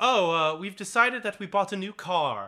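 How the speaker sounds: play-acted casual delivery. Retelling how characters casually break shocking news: imitating a matter-of-fact tone. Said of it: "in the same tone of voice".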